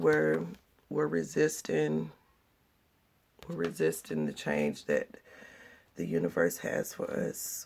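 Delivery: hoarse, rough-edged, raspy, creaky voice. Explaining a tarot card reading aloud, the voice turns raspy: raspy voice. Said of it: "My voice just got really raspy".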